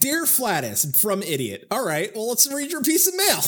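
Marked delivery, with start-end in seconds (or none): 0.0-1.7 put-on angry voice. Reading a piece of mail aloud, in a mock-angry voice. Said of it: "I'll read them in my own angry voice".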